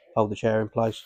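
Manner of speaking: ordinary delivery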